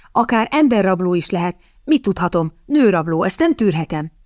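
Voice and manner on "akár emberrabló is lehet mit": usual speaking voice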